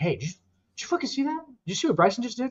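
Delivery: totally serious, awed, high-pitched amazement. Retelling a man talking to camera guys about Bryson DeChambeau, imitating someone in awe. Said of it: "He's like in awe".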